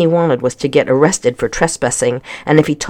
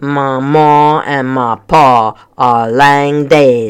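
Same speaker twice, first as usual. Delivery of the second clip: put-on deep, very slow, grumbling voice with Scottish accent. Asked whether her mom or dad is here, the bearded figure answers: deep grumbling voice. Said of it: "her voice was deep and grumbling".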